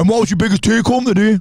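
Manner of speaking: high, mocking, teasing child voice. A dad imitates his child teasing him about his biggest take; imitating child's mocking voice. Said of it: "Like in that voice".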